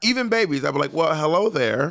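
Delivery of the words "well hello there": measured adult tone, pitched higher. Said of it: "You also talk to them like they're adults".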